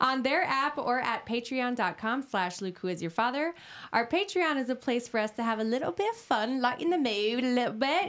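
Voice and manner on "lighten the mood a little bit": put-on English accent, higher. Reading a podcast's Patreon ad: put-on English accent. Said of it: "that's an English accent".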